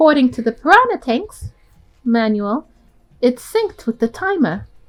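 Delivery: put-on British accent, British pronunciation throughout. Reading a game character's line aloud: British accent. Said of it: "I'm doing British".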